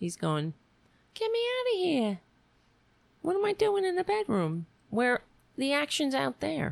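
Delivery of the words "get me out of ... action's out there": sad little cat voice, very high pitched. Voicing the cat shut in the bedroom: voicing a sad cat. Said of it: "He's sad".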